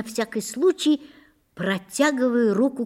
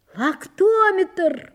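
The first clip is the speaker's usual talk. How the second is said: very high, sudden, startled yell; 9 semitones higher, 4 dB louder than usual. Reading a first-person story, as the narrator jumping up and running: shouted. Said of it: "Заорал я".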